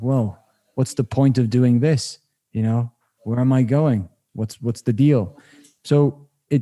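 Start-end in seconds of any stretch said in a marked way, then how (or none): none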